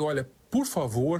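normal talking voice

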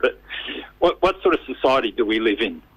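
tearful voice, close to tears, about to give. Speaker appealing for fundraising after recounting a death at a station, near tears. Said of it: "I'm going to cry".

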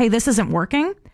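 ordinary delivery

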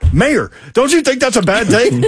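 very high, worked-up, fired-up delivery. Retelling a car conversation, imitating Babs, fired up. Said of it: "when she gets fired up about something".

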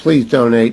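ordinary talk

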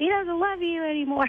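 acted-out yell. Recapping a Toy Story scene, acting out a character's line: retelling a yell. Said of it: "he yells".

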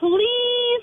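"please" punched with strong stress. Asking a fortune teller for concert tickets: stress on please. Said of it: "emphasis on please".

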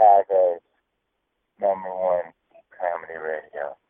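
slow, sultry, seductive put-on voice. Announcing the station name, then saying it was in a porn voice. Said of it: "I said that in my porn voice".

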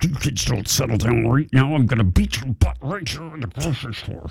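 put-on hushed, clenched-jaw, gritted-teeth voice. Speaker imitates how she scolded kids in a grocery store, imitating her clenched-jaw voice. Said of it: "She always got like this clenched jaw. And that's exactly how she sounded".

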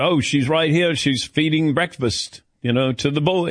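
put-on British accent. Retelling an interview answer about his wife: David Beckham accent. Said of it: "how was that accent?".

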